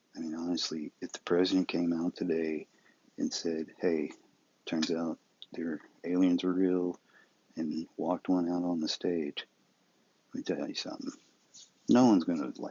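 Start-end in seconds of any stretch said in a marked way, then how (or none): none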